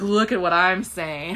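mock smug bragging boy voice.

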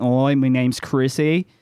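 deliberately awful, very bad Australian accent. Describing a tabletop character who stays in his accent with strangers: very bad australian accent. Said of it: "it's a very bad accent".

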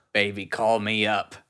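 put-on Brooklyn girl accent. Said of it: "our Brooklyn girl accents devolved into a grandma".

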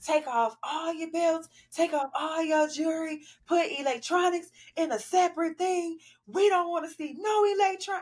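very high, yelled-out screaming. Retelling how someone screamed instructions at people in the aisle, imitating someone screaming orders. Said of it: "when you screamed and said".

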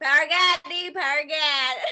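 very loud southern country accent. Repeating what she said to the speaker, in a southern country accent. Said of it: "i say it in like a southern kind of like country i guess accent".

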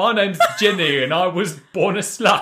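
put-on very high-pitched, poorly done English accent. Parodying characters introducing themselves, as Ginny in a bad English accent. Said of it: "in a bad English accent".

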